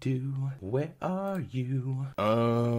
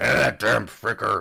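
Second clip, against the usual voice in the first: put-on pirate voice, lower pitched; 4 semitones lower, 7 dB louder than usual. The speaker voices a character they gave a pirate voice: pirate voice. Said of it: "I don't know why I made you sound like a pirate".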